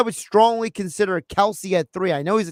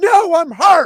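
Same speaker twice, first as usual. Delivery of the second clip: very high, loud, shrill, raised scream; 10 semitones higher, 7 dB louder than usual. Retelling an injured player answering the coach: imitating someone screaming. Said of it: "screaming at the head coach".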